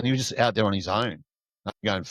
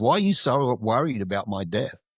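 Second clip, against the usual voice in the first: amused, chuckling, laughing through the words. Retelling a patient's refusal of dialysis: imitating someone laughing while talking. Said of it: "He was just laughing when he was saying it".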